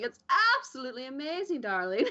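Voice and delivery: giddy, delighted gushing, high, sing-song, swooping tune. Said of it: "the most cheerful Sith you'll ever meet".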